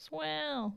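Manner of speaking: swell said in a Southern drawl. Saying the word again to show it needs a Southern accent. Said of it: "can say swell without a Southern accent".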